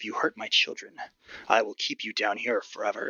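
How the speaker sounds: stern, menacing, threatening tone. Voicing Marie warning the players about her children: stern threatening warning. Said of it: "gives you a very stern frown".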